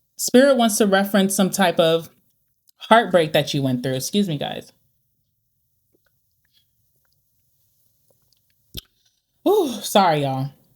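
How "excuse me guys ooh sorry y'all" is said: choking up, voice catching in the throat. Mid tarot reading, the reader breaks off to viewers, choking up. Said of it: "makes me like choke up all the time".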